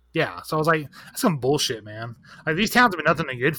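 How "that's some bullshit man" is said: normal talking voice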